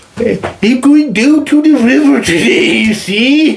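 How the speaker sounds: very high, bad, put-on Welsh accent. Trying out accents in turn, the speaker now does a welsh accent.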